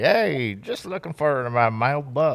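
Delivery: casual, put-on American Southern accent. Suggesting a different accent for a character, the speaker tries a southern accent. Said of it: "get a southern accent in there".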